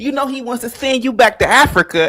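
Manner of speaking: shouting. Retelling a video where an adult yelled at a kid: imitating someone yelling.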